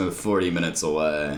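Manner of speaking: ordinary delivery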